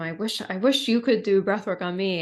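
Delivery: normal talking voice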